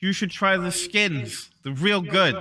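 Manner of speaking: light, half-called calling out. As the players walk away, a character calls after them, half-shouting out. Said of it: "she kind of shouts out".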